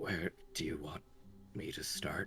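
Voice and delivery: barely audible, rushed, timid, nervous whisper. A nervous character steps forward to address the king, in a nervous near-whisper. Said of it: "pretty much whispers out".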